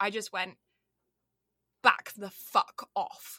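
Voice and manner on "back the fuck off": put-on English accent, louder. Retelling telling off jeering guys: english accent. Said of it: "I went full English".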